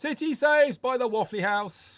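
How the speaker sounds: very high, loud proclaiming town crier call. Voicing a town crier calling out news in the street: town crier calling out. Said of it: "reading out from it".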